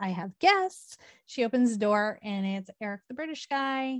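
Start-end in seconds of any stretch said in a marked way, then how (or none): 0.0-1.0 play-acted, eager, bursting with excitement. Retelling a drunk woman hearing a knock at the door, mock-excited. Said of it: "she's so excited".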